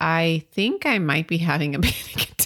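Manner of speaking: emotionless, deadpan, matter-of-fact. Quoting the other speaker's earlier words about a panic attack: imitating a monotone voice. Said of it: "the most monotone way".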